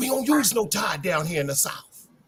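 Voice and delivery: whispering voice. Retelling how a friend answered, imitating someone whispering. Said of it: "He start whispering".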